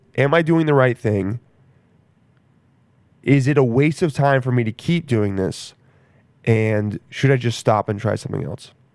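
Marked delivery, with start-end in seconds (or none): none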